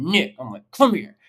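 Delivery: cross, stern, angry, scolding dad voice. Calling a dog back out of a hole, in a mock-angry dad voice. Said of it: "I have to use my like angry dad voice".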